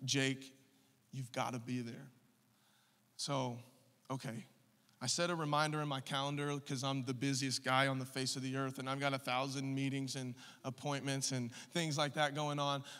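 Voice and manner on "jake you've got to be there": mock, dead-serious mom voice. Retelling what his mom said to him, imitating mom's serious voice. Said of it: "moms get the real serious voice".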